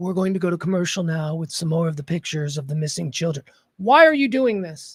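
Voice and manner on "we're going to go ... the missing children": deep, grave, very low somber news-anchor voice. Mocking how news anchors speak: imitating a somber newscaster tone. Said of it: "I hate when they go".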